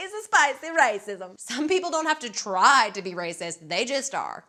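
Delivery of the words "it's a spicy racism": put-on old-world vampire count character voice. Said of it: "I sound like Count Dracula".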